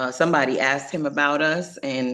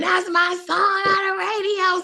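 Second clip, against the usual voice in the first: very high, mock thrilled, shrieking excited scream. Retelling a friend jumping out of the car: imitating Pep screaming excitedly. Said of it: "screaming to strangers".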